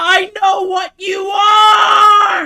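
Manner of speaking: mock shouting. Retelling a video clip of Kobeni running at someone: imitating Kobeni yelling. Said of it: "and yelling".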